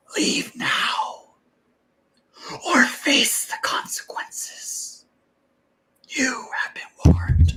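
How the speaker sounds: very soft, whispered ghostly phantom voice. Narrating to the party as a ghostly figure from the fog, very soft ghost voice. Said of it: "Very softly".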